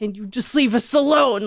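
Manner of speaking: furious exasperated shouting. Retelling yelling up at the attic at a ghost: retelling yelling angrily. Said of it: "yelling up at the attic".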